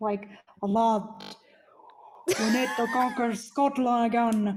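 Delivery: borrowed, put-on Scottish accent. Speaker imagines going Scottish while discussing copying accents, Scottish accent. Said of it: "Imagine if I went Scottish".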